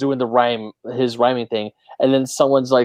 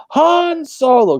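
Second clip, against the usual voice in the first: sudden, shrill, loud, announcer-like yell; 14 semitones higher, 5 dB louder than usual. Retelling a movie scene where a character yells a name: imitating someone yelling. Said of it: "she just turns around and yells".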